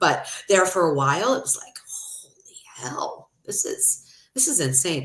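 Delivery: tearful, crying through the words. Telling viewers how it once felt, crying while talking. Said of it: "I'm sorry, I'm crying".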